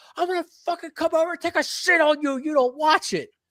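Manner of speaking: shrill, very high, threatening yell. Retelling what the wife's friend yelled during an argument: imitating someone yelling. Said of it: "she yelled".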